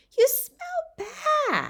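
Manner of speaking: adorable, very high, sing-song little voice. Reading the reply she gives after nodding: adorably high-pitched voice. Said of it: "she said in an adorably high-pitched voice".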